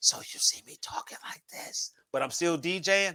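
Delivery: hushed whisper. DJ spinning late at night, whispering. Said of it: "So that's whisper mode".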